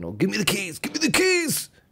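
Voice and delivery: put-on angry drunk shout, high and rising. Retelling what a drunk lad outside was shouting: imitating a drunk lad shouting. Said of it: "Someone's shouting outside now".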